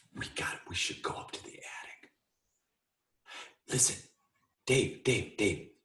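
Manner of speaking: urgent whisper, under the breath. Urging dave to go up to the attic without the ghosts hearing, whispering. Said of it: "Why are you whispering?".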